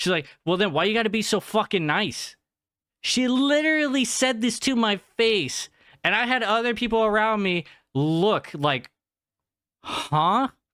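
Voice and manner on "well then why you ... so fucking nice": put-on woman's tone, faster. Retelling what a woman said right to the speaker's face, imitating a woman's tone. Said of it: "like with such a tone".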